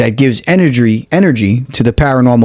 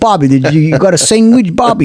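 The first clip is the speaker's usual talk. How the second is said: put-on Italian-American accent; 6 semitones higher than usual. Describing how others portray New York Italians, in an exaggerated Italian-American accent. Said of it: "they put the accent on a little bit more and they go".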